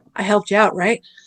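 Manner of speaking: imitated whisper. Retelling a judge's aside at a sidebar: imitating a judge whispering. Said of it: "the first thing he whispers".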